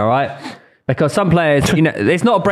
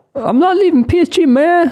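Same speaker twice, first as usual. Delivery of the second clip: put-on very high-pitched Alabama accent; 4 dB louder than usual. Mocking the previous speaker's Mbappe quote by repeating it, Mbappe quote in Alabama accent. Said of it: "From Alabama?".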